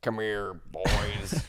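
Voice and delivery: put-on roughhouse dad voice. Acting out a dad home from work calling his boys: put-on roughhouse dad voice. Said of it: "the dad that comes home from work".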